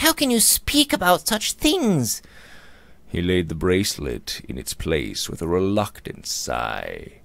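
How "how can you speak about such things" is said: very high, frightened, terrified outcry. A narrator reads a girl telling Luke to put a bracelet down, terrified cry. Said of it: "cried the girl with a look of terror".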